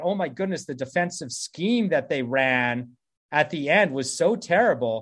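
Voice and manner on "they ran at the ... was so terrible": ordinary talk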